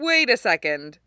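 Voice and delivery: wary, doubting, suspicious questioning tone. One of the group speaks up after the groups are announced, suspicious. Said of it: "Usopp said suspiciously".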